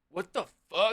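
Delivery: play-acted mad, offended, high, angry outburst. Retelling how an upset guy reacted, imitating an angry outburst. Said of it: "This guy got so mad".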